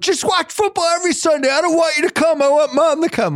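very high, argumentative yelling. Retelling what the son yelled back in the car: imitating son yelling back. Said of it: "yelling at each other".

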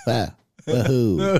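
flat, spiritless, unenthusiastic delivery. Imagining Bloomberg in a Mario game: uncharismatic deadpan Bloomberg as Mario. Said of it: "His uncharismatic deadpan voice".

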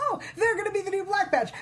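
shouting high and fast.

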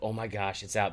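mock gleeful, excited, thrilled outburst. Retelling finding the new preseason magazine at a bookstore: imitating own excited reaction. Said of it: "I was so excited".

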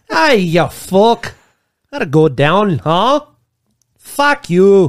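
slow, loud mock Scottish accent.

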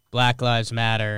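plain

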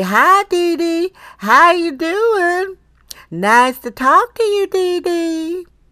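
very high, very slow Southern drawl. Recall your late mother greeting you, imitating your southern mother. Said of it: "great imitation of my mother".

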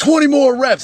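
mock gym bark, very high. Retelling a workout order shouted at the group: imitating Ice Train yelling. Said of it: "because Ice Train's yelling it".

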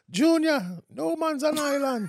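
put-on very high-pitched Jamaican accent. Imitating how a co-host's mother says her saying, Jamaican accent. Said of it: "I just like the Jamaican accent".

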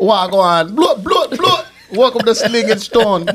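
put-on Jamaican accent. Trying a different language for the show's welcome, a speaker opens in a Jamaican accent. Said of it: "You got a Jamaican accent, right?".

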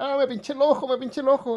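anguished, high, pained yelping scream. Retelling how your sister reacted to milk-soaked paper on her eye: retelling a scream. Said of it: "y empieza a gritar".

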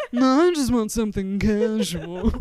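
snooty, snotty, put-on cocktail-party martini voice. Acting out someone saying they want something casual: put-on snotty martini-holding voice. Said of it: "we say it like a snotty, holding a martini voice".

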